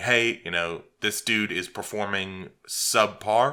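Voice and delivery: ordinary talk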